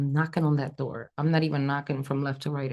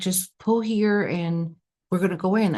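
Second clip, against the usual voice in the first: normal talking voice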